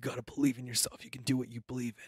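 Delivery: acted whispering. Imitating self-recorded motivational alarm content: imitating a whisper. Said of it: "starts out whispering at me".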